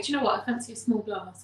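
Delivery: ordinary talk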